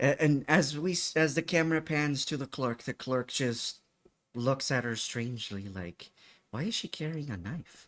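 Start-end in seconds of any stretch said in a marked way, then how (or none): 6.5-7.9 quiet mutter under the breath, to oneself. Voicing a gym clerk who wonders about a knife: muttered under his breath. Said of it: "he says under his breath".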